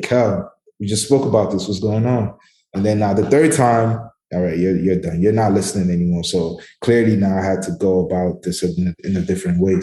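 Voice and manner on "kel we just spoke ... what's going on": normal talking voice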